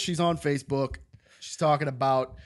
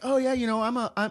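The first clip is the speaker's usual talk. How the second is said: terrible put-on woman's voice, high-pitched; 9 semitones higher than usual. Retelling what a woman said, in a terrible lady voice. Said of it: "Was that your lady voice?".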